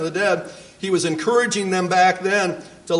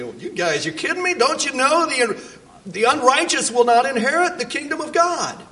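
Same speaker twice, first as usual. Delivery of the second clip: mocking, incredulous, sarcastic sing-song voice; 6 semitones higher than usual. A speaker paraphrases the scripture passage's author, acting out sarcasm. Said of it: "Pretty sarcastic, wasn't he?".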